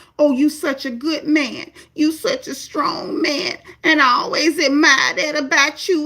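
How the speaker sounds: put-on near-crying drunken voice. Retelling a woman at a party flattering a man, imitating fake-drunk, near-crying talk. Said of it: "Pretending like she drunk, acting like she about to cry".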